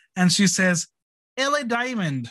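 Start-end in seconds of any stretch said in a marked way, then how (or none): 1.4-2.3 put-on Scottish brogue accent. Retelling what Rue says when taught another name: imitating Rue's Scottish brogue. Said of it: "with a Scottish brogue".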